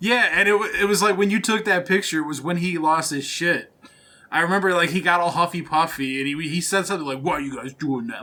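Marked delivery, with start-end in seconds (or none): 7.2-8.2 deep, hushed serial-killer voice. Recalling a man objecting to the group taking a picture, deep serial killer voice. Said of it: "in his like deep serial killer voice".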